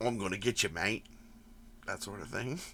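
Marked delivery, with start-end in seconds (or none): 0.0-1.1 put-on Australian accent, lower, quieter. Speaker demonstrates the accent he hears in his head: Wolf Creek Australian accent. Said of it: "he very much has an Australian accent".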